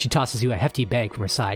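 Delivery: plain reading voice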